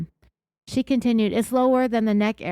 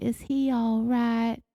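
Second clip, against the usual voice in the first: soft, slow, gentle, deeply concerned and emotional; 4 dB quieter than usual. Imitating how a woman asked about the man she shot: imitating soft emotional concern. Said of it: "so softly and emotionally, like she's deeply concerned".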